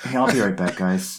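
really soft, hushed, gentle-sounding voice. Retelling a brother getting up after a movie, imitating someone speaking really softly. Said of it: "really soft".

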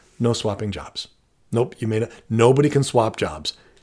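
blunt, upfront, firm, no-nonsense, matter-of-fact tone. Demonstrating how to shut down a request, very upfront and matter-of-fact. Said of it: "very upfront, very matter of fact".

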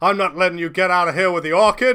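very loud, high-pitched, ruthless villain shout. The game master voices the armed organizer yelling at the players: organizer shouting. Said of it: "And he shouts".

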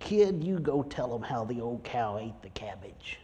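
put-on small, gruff old woman voice. Retelling advice a woman in her 80s gave the speaker: gruff little voice. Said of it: "she had a gruff little voice".

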